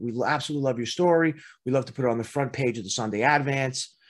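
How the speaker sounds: usual speaking voice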